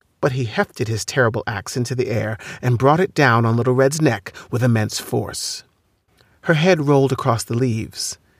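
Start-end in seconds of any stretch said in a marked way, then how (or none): none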